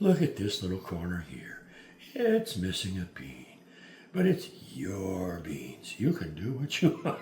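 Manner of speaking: soft, easygoing, gentle TV painter delivery. Spreading out beans, the speaker talks to viewers in a soft Bob Ross voice. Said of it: "I'm doing that soft voice again".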